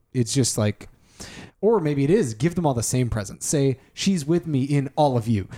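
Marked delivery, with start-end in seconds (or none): none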